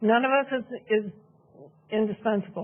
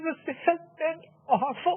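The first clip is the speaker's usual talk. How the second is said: tearful, crying while speaking, higher; 7 semitones higher than usual. Speaking during public comment in support of someone, crying while speaking. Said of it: "I'm crying for him as well".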